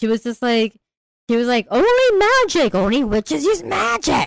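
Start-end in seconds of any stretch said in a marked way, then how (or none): 1.7-4.3 angry, slow, drawn-out and pitched-up voice. Retelling what a character in a book said: imitating an angry retort. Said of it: "she said it so angrily too".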